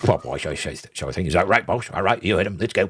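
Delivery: snuffling, mucus-slurping goblin voice. Voicing a goblin with a tusk in his nostril, snuffling goblin voice. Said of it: "kind of talks like this all the time".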